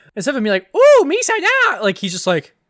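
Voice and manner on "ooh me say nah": very high, loud, drawn-out alien voice. Contrasting a normal voice with the voice the actor did: Jar Jar voice. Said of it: "the voice he did was just like".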